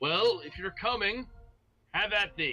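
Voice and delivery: resounding, booming voice. A storyteller voices someone inside a cave answering the party, in a booming voice. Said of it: "you hear hear a booming voice come from sounds like from within the cave".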